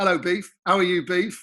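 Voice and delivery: ordinary delivery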